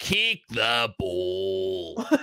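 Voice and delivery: put-on Australian giant voice. Describing an uncle who just watches football on tv: imitating an australian giant. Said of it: "massive Australian giant watching football".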